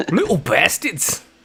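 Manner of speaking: put-on big Irish accent, very high-pitched and very loud. Asked whether he says it in a southern accent, show how he says it, in a big irish accent. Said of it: "He says it like big Irish, but better than I did".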